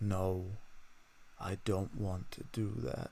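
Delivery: voice settling downward on that. Demonstrating to listeners how to assert a boundary, downward inflection. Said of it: "We always end the sentence with a downward inflection".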